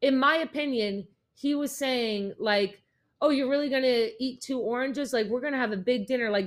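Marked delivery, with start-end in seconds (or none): 3.2-6.3 dry, mocking, sarcastic teasing tone. Retelling what a man said about eating two oranges: imitating sarcastic teasing. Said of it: "that's his sarcasm".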